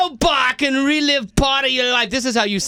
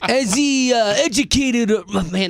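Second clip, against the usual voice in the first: slow, put-on Italian accent; 2 semitones lower than usual. Answering a pageant question while trying out accents, in an Italian-sounding accent. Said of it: "now it's doing Italian".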